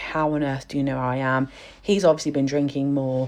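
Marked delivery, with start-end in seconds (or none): 0.0-1.5 put-on bewildered tone. Retelling her reaction to him at the door: imitating someone bewildered.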